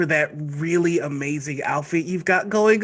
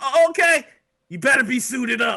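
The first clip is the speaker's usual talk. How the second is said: loud, rough, gruff, pitched-up holler; 8 semitones higher, 3 dB louder than usual. Narrating a scene to the players, voice the arriving character in a loud, gruff voice. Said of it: "a loud, gruff voice".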